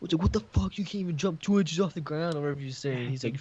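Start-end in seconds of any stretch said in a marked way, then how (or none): 0.2-2.3 high-pitched, taunting, trash-talking yell. Retelling a teammate yelling at himself during a game: imitating someone yelling. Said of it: "yelling at Hayden".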